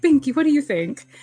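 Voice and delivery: put-on, high, affected preppy accent. Mocking how a man talks to the woman he calls Binky; imitating an affected accent. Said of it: "he even has this affected accent on too".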